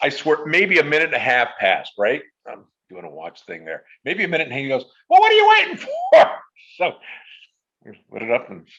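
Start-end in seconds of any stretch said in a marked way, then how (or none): 5.1-6.3 shrill, very loud, high put-on funny voice. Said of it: "I apologize for doing the voice".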